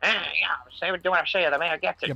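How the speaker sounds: cartoonish, mocking caricature of a dude voice. Mocking how another speaker talks with a cartoonish imitation. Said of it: "It's just cartoonish".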